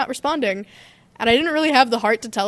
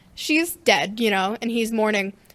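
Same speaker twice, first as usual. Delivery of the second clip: ordinary delivery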